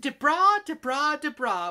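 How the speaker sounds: very loud, high, drawn-out put-on British accent. Reading out a note from the sender of a prize: British accent.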